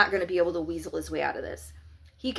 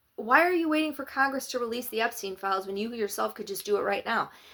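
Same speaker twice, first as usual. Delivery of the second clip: put-on calm, polite tone without attitude; 4 semitones higher than usual. Speaker replays how a reporter asked her question, mimicking a calm, polite question. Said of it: "this is how she said it too".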